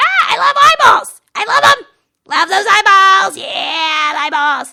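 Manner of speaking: belted very high and loud, silly eagle voice. Speaker introduces an eagle named Ralph and speaks as him, Ralph the eagle voice. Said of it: "And Ralph is my eagle, and he goes".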